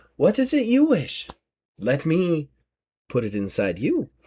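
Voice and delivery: slow, sing-song, alluring, seductive woman's voice. Voicing a woman who approaches a player character: seductive woman character voice. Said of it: "she kinda looks at you and goes".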